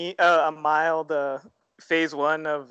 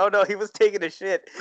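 ordinary talk, nothing marked

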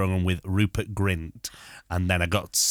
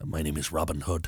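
put-on Irish actor voice, lower and quieter; 3 semitones lower, 4 dB quieter than usual. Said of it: "Can you do Liam Neeson?".

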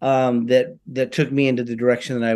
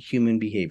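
ordinary talk, nothing marked

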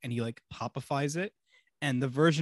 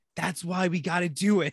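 put-on drunken delivery, pitched up a bit; 5 semitones higher, 3 dB louder than usual. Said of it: "when he's drunk and he's first trying to convince".

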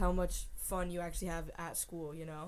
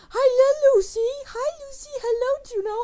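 dog voice, much higher, louder, slower; 11 dB louder than usual. Student retells greeting her dogs during an unmuted Zoom class, in her dog voice. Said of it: "I started doing my dog voice".

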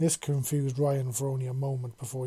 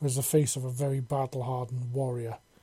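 ordinary delivery

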